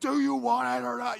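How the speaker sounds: shrill, high, rough, in-your-face screaming. Showing how a coach sometimes talks to a fighter mid-fight, screaming in your face. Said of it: "they're screaming in your face".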